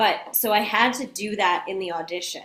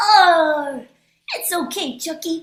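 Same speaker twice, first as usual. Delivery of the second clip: put-on cartoon toddler voice, much higher pitch; 9 semitones higher, 6 dB louder than usual. Recalling learning impressions, the speaker does a Tommy Pickles impression. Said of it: "impression of Tommy Pickles from Rugrats".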